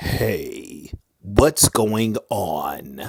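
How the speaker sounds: very slow voice, spoken right on the microphone. Showing the greeting again, leaning in: close to the microphone. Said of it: "unless you're close to the microphone".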